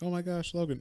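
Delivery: weepy, tearful, high crying voice, pleading. Retelling a comic scene where a character is found crouched crying: imitating a character crying.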